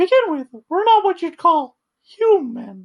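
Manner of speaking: very high, sing-song voice. Reading a game's AI speech aloud in a Mickey Mouse voice. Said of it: "which now I'm reading in the fucking Mickey voice".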